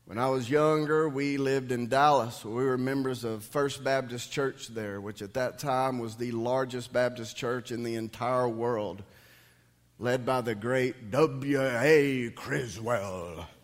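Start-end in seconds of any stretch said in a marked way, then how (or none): 10.0-13.4 put-on booming preacher voice. Recalling who led a Dallas Baptist church: horrible W A Criswell impersonation. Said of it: "That was a horrible impersonation".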